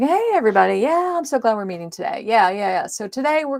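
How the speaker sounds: offhand, casual, breezy, flippant throwaway chatter. Showing the meeting opener a speaker will avoid: flippant tone. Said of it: "it's not going to be flippant. It's not going to be like".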